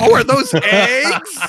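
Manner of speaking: put-on top-of-lungs scream. Retelling shouting at two passing guys at midnight: imitating screaming at top of lungs. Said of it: "we just start screaming at the top of our lungs".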